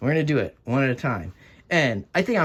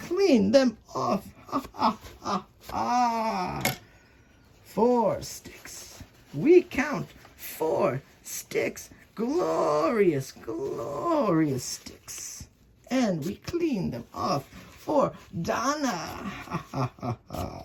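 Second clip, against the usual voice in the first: put-on pitched-up character voice with long drawn-out ha's; 8 semitones higher, 3 dB quieter than usual. Counting sticks and cleaning them off for Donna, in the Count voice. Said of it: "I'm even going to do it in the count voice today".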